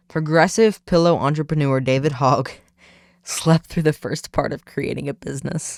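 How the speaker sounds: speaking broken up by laughter. Speaker reads a Washington Times story aloud: laughing while reading. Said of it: "I'm laughing".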